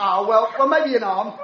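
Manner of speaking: normal talking voice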